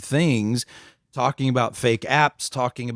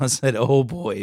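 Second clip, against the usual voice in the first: ordinary delivery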